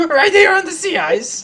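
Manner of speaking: very high, very loud, indignant, outraged outburst. Repeating an acted line when asked for more: louder acted indignation.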